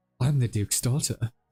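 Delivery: whispered, secretive. Voicing a dancer who pulls a partner close mid-dance: whispering in his ear. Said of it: "whispers in your ear".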